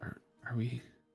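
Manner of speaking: hushed whisper in character voice. Asking another character, in a hushed aside, whether they are brothers: whispering in character. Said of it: "kinda whisper".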